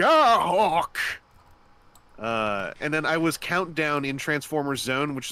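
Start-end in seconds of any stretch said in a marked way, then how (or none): 0.0-1.0 put-on Texan accent, extreme distress, loud and high. Recalling a favorite dub line, the speaker redoes it in put-on extreme distress, texan accent. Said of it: "when I said "Gah Hawk" in like extreme distress".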